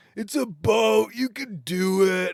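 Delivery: high, loud, heckling, jeering shout.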